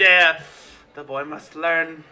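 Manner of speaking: low mumbled muttering in character voice. Voicing a character who answers a question about the boy: muttering in character. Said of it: "He mutters to you".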